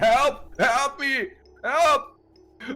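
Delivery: frantic, very high-pitched panicked shrieking. A game character comes out onto the street at six in the morning: screaming for help. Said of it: "Just starts screaming".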